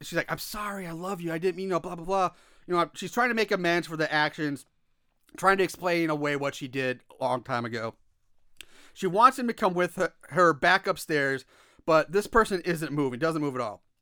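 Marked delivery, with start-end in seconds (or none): 0.3-2.3 whisper said loudly. Retelling a movie scene, quoting a character: imitating a loud whisper. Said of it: "she's loudly whispering to him".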